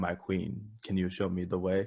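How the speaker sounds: put-on Ugandan accent. Retelling how players in VR chat talked: imitating a put-on Ugandan accent. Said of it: "putting on, like, a Ugandan accent going".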